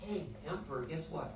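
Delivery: whispered aside. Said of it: "your kidneys are whispering".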